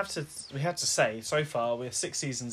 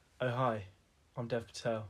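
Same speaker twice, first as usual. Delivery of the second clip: put-on dull, boring voice; 4 dB quieter than usual. After calling everyone boring, the speaker does a mock-boring Dev Patel impression. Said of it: "everyone was so fucking boring".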